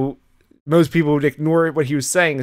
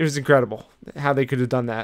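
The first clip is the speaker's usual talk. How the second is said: ordinary delivery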